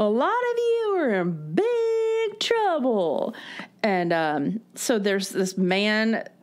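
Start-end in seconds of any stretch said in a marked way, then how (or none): 0.0-3.3 put-on shrill, very high yell-speaking, drawn-out big. Describing a woman who paces and repeats herself, retelling her yell-speaking hall-monitor voice. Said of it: "she's yell speaking with her accent".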